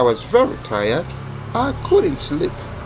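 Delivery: stress on couldn't.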